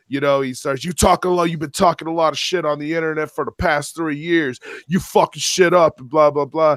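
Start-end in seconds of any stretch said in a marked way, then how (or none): 0.8-6.0 mock yelling, higher. Retelling a man who got in his face: imitating someone yelling. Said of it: "He got right in my face yelling".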